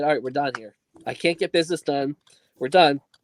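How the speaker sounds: plain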